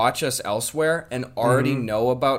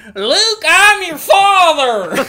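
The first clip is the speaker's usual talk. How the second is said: very high, very loud, very slow drawn-out villain parody; 11 dB louder than usual. Joking about a fun crossover character, in a Darth Mater voice. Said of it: "more about this Darth Mater guy".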